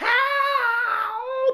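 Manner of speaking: very high, very loud, shrill, drawn-out goblin shriek. Voicing a goblin who wakes and sees a player: goblin screaming for help. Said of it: "he starts to scream".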